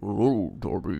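low, quavering, wobbly phone voice. Retelling the phone call Darby gets while police drive after him, wobbly Saw guy voice. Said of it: "it's a wobbly voice man".

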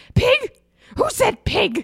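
very high, slow, drawn-out, insulted, affronted voice. Retelling a movie scene where Miss Piggy whips around: imitating insulted Miss Piggy. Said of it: "She gets so insulted".

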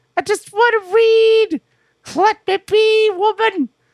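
very high-pitched, slow, weary voice. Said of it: "In a high, in a high pitched voice".

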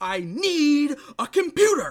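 imitated shouting. Quoting a fantastic line from someone who gets super upset, imitating someone shouting. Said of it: "and he shouts this".

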